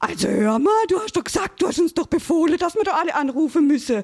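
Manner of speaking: put-on outraged little kid voice, high and indignant. At the microphone, retelling a little caller's reply, acting indignant. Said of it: "hat er ganz empört gesagt".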